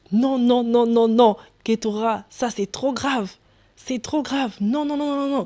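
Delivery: crying out, shouting. Retelling what the father said after hearing the dream: imitating father crying out. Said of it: "il pousse un cri à la fin".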